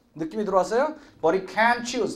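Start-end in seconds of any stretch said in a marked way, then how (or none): 1.2-2.2 stress falling on can. Teaching an English sentence to Korean speakers, with stress on can. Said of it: "can이 해서 강세가 붙죠".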